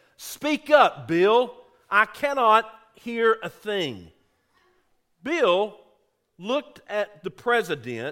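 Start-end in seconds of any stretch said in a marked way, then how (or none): 0.2-4.1 play-acted, very loud, booming shout. Retelling the president interrupting a staff lunch prayer: retelling a very loud shout. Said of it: "shouted out in a very loud voice".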